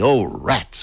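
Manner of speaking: ordinary delivery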